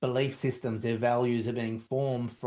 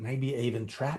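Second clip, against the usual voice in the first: hushed, whispered voice. Speaker talking to listeners about a hard time, whispering. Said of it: "if I'm whispering that one".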